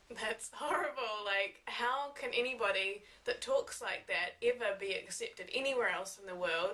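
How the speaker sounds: ordinary talk, nothing marked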